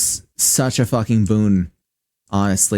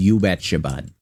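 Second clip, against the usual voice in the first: exaggerated, over-the-top, put-on Midwestern accent; 3 semitones lower than usual. The speaker demonstrates the voice a certain phrase makes them slip into; exaggerated Midwestern accent. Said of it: "the like exaggerated Midwestern accent".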